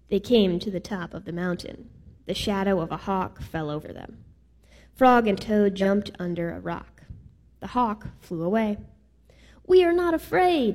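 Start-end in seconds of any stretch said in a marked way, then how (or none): 9.6-10.7 screaming, pitched way up high. Two characters answer together after a hawk flies away: screamed. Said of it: "screamed Frog and Toad at the same time".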